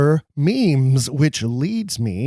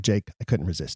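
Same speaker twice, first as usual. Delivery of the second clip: ordinary talk, nothing marked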